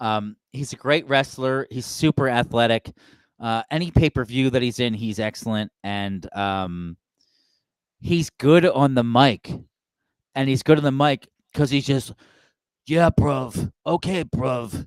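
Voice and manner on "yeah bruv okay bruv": put-on slow, drawn-out, stretched British accent. Praising a wrestler's mic work, doing a Will Ospreay impression. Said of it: "he's got this accent".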